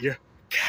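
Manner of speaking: put-on deep male voice. Retelling what someone said in her ear, in a deep man voice. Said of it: "like in a deep man voice".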